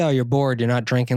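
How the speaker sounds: plain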